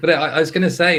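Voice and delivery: talking through high, loud laughter.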